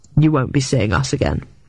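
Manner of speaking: ordinary talk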